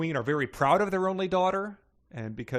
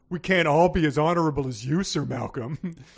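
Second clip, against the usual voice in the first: loud, sarcastic, jabbing tone; 3 semitones higher, 6 dB louder than usual. Retelling a story, quoting one knight's sarcastic reply to another knight. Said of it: "He says sarcastically".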